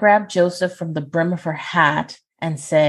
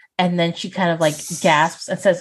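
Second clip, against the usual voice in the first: ordinary talk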